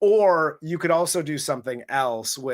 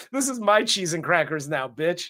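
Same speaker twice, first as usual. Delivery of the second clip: normal talking voice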